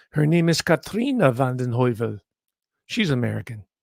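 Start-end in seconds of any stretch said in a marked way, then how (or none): 0.1-2.1 rough approximation of a put-on Dutch accent. Saying the magazine publisher's name, in an approximate Dutch accent. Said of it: "I just gave her the Dutch accent".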